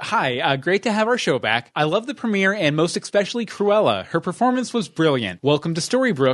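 usual speaking voice

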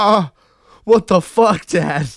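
very high-pitched, very loud, mortified embarrassed cry. Acting out a daughter whose dad ate the crab: imitating the mortified daughter. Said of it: "Was she just like".

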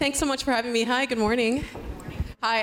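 breathless, winded, rushed words tumbling out. Guest greets the hosts at the start of a morning conversation, out of breath. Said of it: "I'm kind of out of breath".

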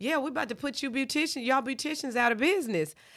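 high, loud hollered-out call. Retelling what she yelled out as the group split apart, imitating her yelling out. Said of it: "she yells out".

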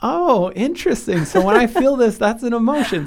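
high, loud mock amazement.

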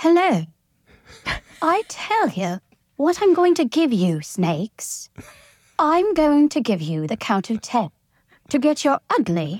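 Received Pronunciation British accent. Called on for the Queen's English, the speaker performs a Queen's English accent. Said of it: "Now for the Queen's English".

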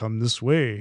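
very deep, doofy put-on bro voice. Describing how the voices all sounded the same, imitating a very deep voice. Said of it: "It was that very deep sort of like".

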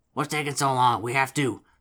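loud, gruff, throaty, rough, guttural goblin voice. Narrating a game, the storyteller voices a goblin calling from across the cavern in a rough guttural goblin voice. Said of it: "a rough guttural voice comes from the other side".

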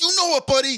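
put-on very loud, very high, thick, hyped-up Brooklyn accent. Retelling what a restaurant worker said on the way out: imitating a thick brooklyn accent. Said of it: "he had the thick Brooklyn accent".

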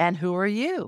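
light, lilting voice. Retelling asking a spiritual being who it is: lilt in the voice. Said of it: "literally with a lilt in my voice".

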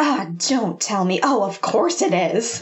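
put-on grumpy man voice. Retelling Mitch's reaction at the door in an episode; mock-grumpy Mitch. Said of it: "he's just so grumpy this entire episode".

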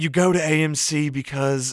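slow put-on movie-ad announcer voice.

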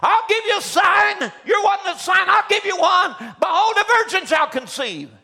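put-on prophet screaming. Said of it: "he screams out".

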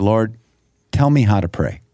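ordinary talk

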